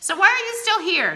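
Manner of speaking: very high, loud, angry voice. Davenport rounding on [name], who claims to feel sick, angrily. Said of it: "Davenport said to me angrily".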